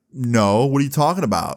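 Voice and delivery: plain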